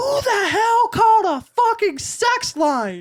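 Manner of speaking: mock very high, squeaky, swooping yell. Telling how mom found out about a phone call, imitating mom yelling. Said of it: "my mom yells".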